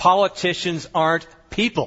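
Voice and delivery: grand, proclaiming, declaring manner. Recounting a man at a public meeting, acting out his very loud proclamation. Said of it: "he proclaimed in a very loud voice".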